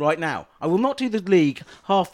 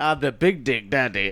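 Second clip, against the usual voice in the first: put-on boastful voice, lower; 6 semitones lower than usual. Joking about a ketchup brand, playing a new character: Big Dick Daddy character voice. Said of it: "I want that voice".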